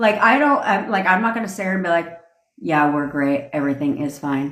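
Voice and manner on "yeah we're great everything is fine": expressionless, dead-even, flat monotone delivery. Showing how people don't talk to someone, in a flat monotone. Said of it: "you're not sitting there monotone".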